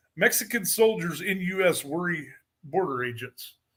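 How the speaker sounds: ordinary talk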